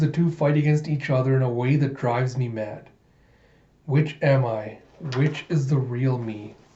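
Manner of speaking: ordinary talk, nothing marked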